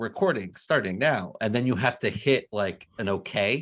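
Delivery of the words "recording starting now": small, female, automated robot announcer voice. Imitating the recording announcement on Zoom: Zoom robot voice. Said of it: "little robot voice".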